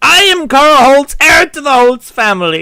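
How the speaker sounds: proud, loud, high, slow delivery.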